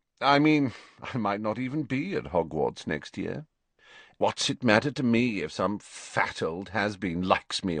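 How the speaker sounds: ordinary delivery, nothing marked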